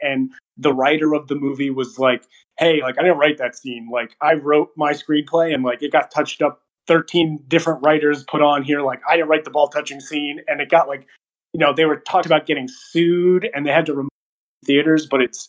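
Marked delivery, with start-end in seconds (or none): none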